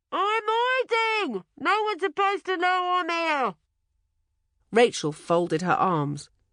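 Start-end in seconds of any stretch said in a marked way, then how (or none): 0.1-3.5 cross, muffled shout, pitched up. Narrator reads the hiding goblin answering Rachel from the postbox: muffled, cross yell. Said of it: "a muffled voice yelled crossly".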